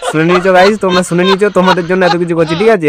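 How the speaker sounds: high-pitched, loud, excited delivery.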